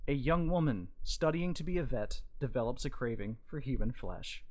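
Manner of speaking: ordinary talk, nothing marked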